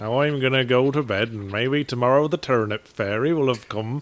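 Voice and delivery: put-on, fake West Country accent. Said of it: "do the whole thing in a West Country accent".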